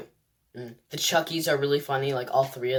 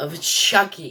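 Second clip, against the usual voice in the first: raised, stepped-up delivery; 4 semitones higher, 5 dB louder than usual. Introducing a review video of a movie, raised voice. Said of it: "Sorry that I raised my voice there".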